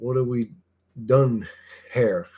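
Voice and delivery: put-on Scottish accent. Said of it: "that instant Scottish accent".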